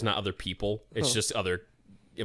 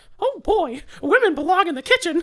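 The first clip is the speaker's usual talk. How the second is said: piped up very high and loud; 7 dB louder than usual. Retelling what Logan said to friends, in a Mickey Mouse voice. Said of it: "in a Mickey Mouse voice".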